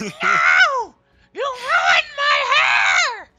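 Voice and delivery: put-on screaming creature voice. Voicing a drow whose hair was sprayed with soap: drow screaming. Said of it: "She screams".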